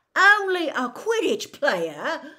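very high, very loud incredulous voice. Narrating, Ron answers Hermione as if he can't believe his ears, incredulous. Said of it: "as though he couldn't believe his ears".

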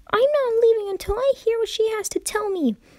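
high ringing shout. Dash, told by Rainbow to go back home, answers: shouted. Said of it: "shouted Dash".

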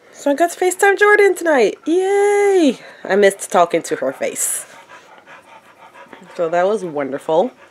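drowsy, loopy chatter with a drawn-out yay. Telling the camera about the evening: loopy from sleep medicine. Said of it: "I'm feeling a little bit loopy right now".

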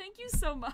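high, loud, laughing voice.

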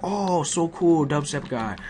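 high put-on Japanese accent. Retelling fans in a hallway recognizing him, imitating Japanese accents. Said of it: "they do it in their Japanese accents".

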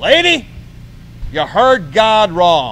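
thundering, booming, very slow, drawn-out preacher voice. Turning to a lady behind and answering her in a put-on preacher voice. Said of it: "I put on my preacher voice".

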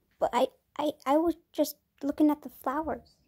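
stuttering. Narrating a story, Eclipse answers Bone Rattle, stuttering. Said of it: "he stuttered out".

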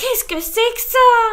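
high, very loud, agitated, alarmed outcry. Reading a story, Grâce the slug exclaims over the screaming baby: agitated exclamation. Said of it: "s'exclama Grâce d'une voix agitée".

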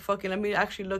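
ordinary delivery

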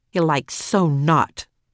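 grumbling. A daughter following her mother down the stairs, grumbling. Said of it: "Max grumbled".

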